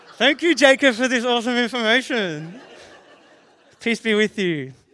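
high, loud, sarcastic, fake gushing tone.

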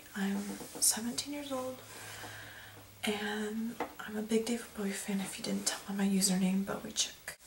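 talking quietly. Reenacting their first video blog from seven years ago, talking quietly. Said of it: "I'm sorry I'm talking quiet".

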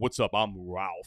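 deep radio announcer style voice, dropped low. Retelling how the MC at the event introduced himself; Ralph's deep radio voice. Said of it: "like a radio voice".

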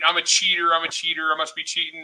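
ordinary talk

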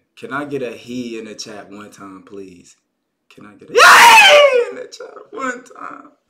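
loud, cracking-voiced shout, "he" drawn out. Speaker asking the chat for a greeting, voice cracking. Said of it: "my voice cracking".

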